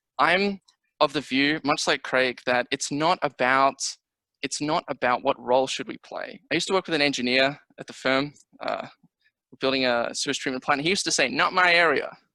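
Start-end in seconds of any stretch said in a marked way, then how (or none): 11.3-12.1 put-on heavy, thick American accent, laid on. Quoting an engineer colleague from the firm, in a thick American accent. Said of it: "in a thick American accent".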